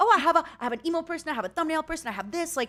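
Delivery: high, fast, eager voice. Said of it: "I'm like".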